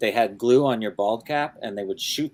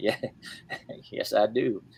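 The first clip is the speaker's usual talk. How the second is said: put-on drawling voice, quieter; 5 dB quieter than usual. Retelling a talk show exchange, answering the host: George Bush impression. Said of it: "a great George Bush and Matthew McConaughey impersonation".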